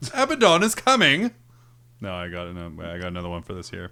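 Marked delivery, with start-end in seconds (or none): 0.1-1.3 very high, loud put-on British accent. Urged by others to try again, the speaker does a put-on british accent. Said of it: "they speak with a British accent".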